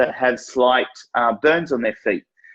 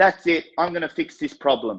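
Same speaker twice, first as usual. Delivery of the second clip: quick, completely certain, confident tone; 3 semitones higher than usual. Showing how someone walking into an office to fix a problem sounds: confident, fast talking. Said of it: "I'm talking fast".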